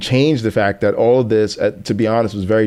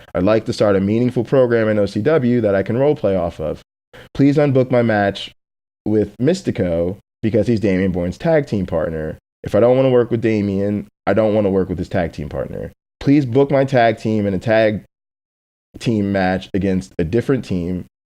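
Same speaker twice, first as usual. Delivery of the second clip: usual speaking voice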